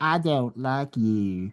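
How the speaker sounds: very slow cartoon-dog drawl, every word drawn out. Redoing the car's line in a cartoon dog voice: Droopy Dog voice. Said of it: "you remember Droopy Dog?".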